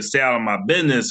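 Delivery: normal talking voice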